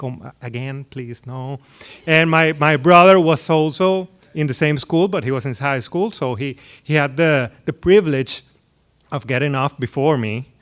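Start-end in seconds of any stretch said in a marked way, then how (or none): 0.0-1.6 disappointed sigh, lower and quieter. Retelling a parent's look in the rearview mirror: imitating mom's disappointment. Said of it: "just disappointed".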